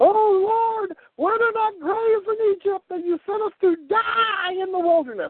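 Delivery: put-on, very high whining with drawn-out "oh". Retelling the children of Israel complaining to Moses, mock whining. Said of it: "kept on whining like pussies to Moses".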